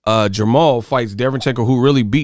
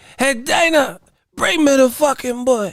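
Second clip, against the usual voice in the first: put-on thick Cuban accent, high-pitched and slow; 14 semitones higher than usual. Calling out to Dana the way a fighter did, in a Yoel Romero voice with a thick Cuban accent. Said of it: "he had that thick Cuban accent".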